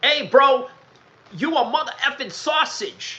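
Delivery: put-on American street accent.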